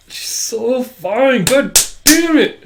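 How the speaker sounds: high, slow, swooning cry.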